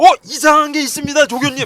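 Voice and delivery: high, loud startled cry.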